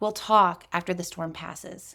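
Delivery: slow, steady, calm, non-escalating delivery. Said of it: "Say it slower than you think".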